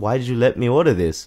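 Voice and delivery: jokingly mock-complaining, playful. Speaker retelling complaining to the waitress about the order, jokingly mock-complaining. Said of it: "I was jokingly, like, complaining to the waitress".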